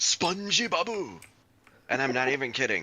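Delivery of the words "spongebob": imitated Japanese-style pronunciation of a name. Answering how spongebob is said in japanese: imitating japanese pronunciation. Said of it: "the way that they say SpongeBob in Japanese".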